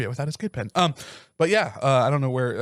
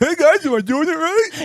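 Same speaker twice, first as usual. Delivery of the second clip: mock very high, squeaky, lip-full, weird, loud voice; 8 dB louder than usual. Retelling trying chewing tobacco with friends: imitating own voice with chew in lip. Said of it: "You would have a weird fucking voice".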